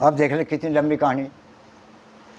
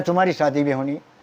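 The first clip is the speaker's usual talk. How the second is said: plain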